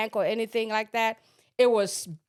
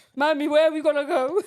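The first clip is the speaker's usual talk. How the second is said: put-on crying child voice, higher and louder; 5 semitones higher, 5 dB louder than usual. Retelling how the daughter asked where they would go: imitating a crying child. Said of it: "she's crying".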